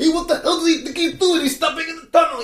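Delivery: put-on angry New York accent. Describing a story where everyone on a New York train swears, as a put-on enraged New Yorker. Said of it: "really sort of enraged New Yorker".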